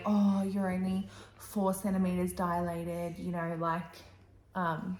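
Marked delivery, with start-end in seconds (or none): 0.0-3.2 mock, really deflating, let-down tone. Retelling what the examining woman said during labor: imitating a deflating tone. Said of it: "a really deflating kind of way".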